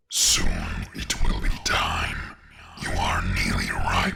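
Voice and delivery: strange, sinister, deep booming voice. A narrator voices the voice breaking the silence: deep booming voice. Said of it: "The deep booming voice".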